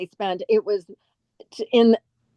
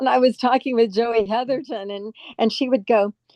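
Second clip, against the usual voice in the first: normal talking voice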